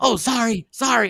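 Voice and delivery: put-on panicked voice. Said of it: "in a panic".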